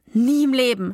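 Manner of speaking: ordinary delivery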